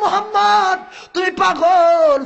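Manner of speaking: furious, angry shout.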